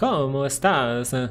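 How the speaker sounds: put-on Spanish spoken with an Italian accent. Imitating a brother who speaks Spanish, Italian-sounding Spanish. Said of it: "but he sounds Italian".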